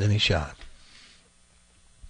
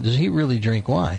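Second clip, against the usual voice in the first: ordinary talk, nothing marked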